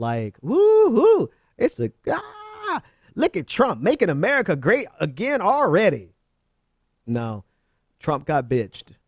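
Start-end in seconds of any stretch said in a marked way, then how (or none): 0.4-6.1 derisive, high, swooping, sarcastic party-crowd whoop. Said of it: "people are celebrating this carrier deal".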